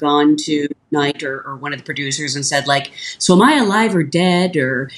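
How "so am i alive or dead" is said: ordinary talk, nothing marked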